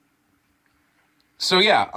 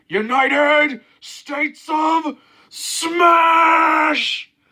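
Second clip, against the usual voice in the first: high, slow, booming bellow. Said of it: "he just bellows out".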